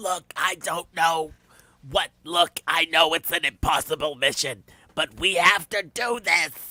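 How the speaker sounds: drag-queen-style serious voice. Imitating Alec Baldwin trying to sound serious: Alec Baldwin serious voice like Harvey Fierstein. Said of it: "he almost turns into Harvey Fierstein".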